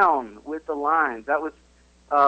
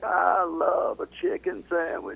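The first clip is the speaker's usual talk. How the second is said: rough, creaky, raspy voice; 3 semitones higher than usual. Showing how to get into the voice, give a sample Bill Clinton impression. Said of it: "as I show you how to get into the voice".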